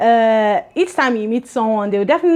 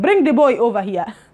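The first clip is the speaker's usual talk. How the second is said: attempted African accent accidentally slipping into Russian accent. Trying to imitate an East African accent but slipping into an accidental Russian accent. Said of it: "I was sounding Russian, like when they're saying".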